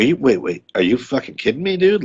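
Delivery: incredulous, disbelieving tone. Retelling a movie scene, imitating Alfred Molina in disbelief. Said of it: "He's like".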